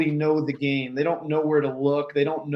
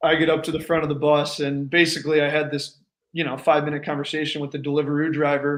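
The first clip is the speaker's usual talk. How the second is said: plain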